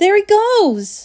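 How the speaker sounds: high shout, drawn out. Someone in the crowd on the river bank points upward: shouted. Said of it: "somebody shouted".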